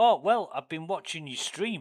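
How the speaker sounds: put-on loud, high-pitched northern English accent. Retelling what a guy who turned up said to the speaker: northern English accent. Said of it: "with a northern English accent".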